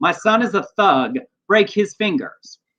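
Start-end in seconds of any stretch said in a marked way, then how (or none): none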